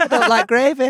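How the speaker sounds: put-on chicken voice with northern accent. Joining in the bit about Chicken Run: Chicken Run chicken voice. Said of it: "she sounded like the thick chicken from Chicken Run".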